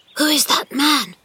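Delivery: frightened whisper. Narrating a story, a character suddenly speaks up: frightened whisper. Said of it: "said in a frightened whisper".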